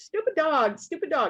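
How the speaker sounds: mock upset kid voice, high, angry, freaking out. Retelling the oldest son's outburst over a dog: imitating a son freaking out. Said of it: "he's freaking out".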